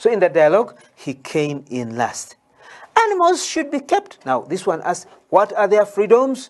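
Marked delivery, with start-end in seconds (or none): 3.0-4.3 small, tiny, very high voice. Recounting a dialogue, giving the closing reply in Konde's small voice. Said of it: "Konde came back with his small voice".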